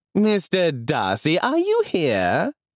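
coy, arch, drawn-out sing-song, very high and slow. Reading a novel, the narrator voices a lady crying out in an arch tone. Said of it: "Miss Bingley cried out in an arch tone".

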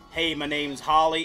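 attempted Texan accent. Showing chat what a texan might sound like: attempted texan accent. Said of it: "I don't know what accent that is".

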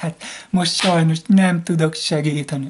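mock syrupy sweet talk. Mocking someone who talks sweetly but won't help: mock sugary-sweet tone. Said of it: "ilyen mézes-mázosan".

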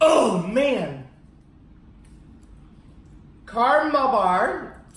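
speaking through stuck teeth. Reviewing candy on video, talking with candy stuck to the teeth. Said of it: "so I'm gonna be talking like this".

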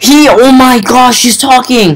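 high-pitched, starstruck, excited gush.

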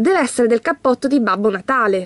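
ordinary delivery

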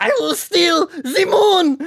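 very high, loud cartoon supervillain voice, squealed out. Speaker launches into an impression right after naming Gru from the Minions: Gru voice. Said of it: "Gru from the Minions".

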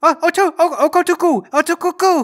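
tiny, high female creature voice, protesting gibberish.

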